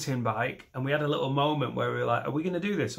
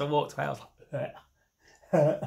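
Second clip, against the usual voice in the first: ordinary delivery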